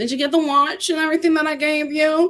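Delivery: high mocking voice.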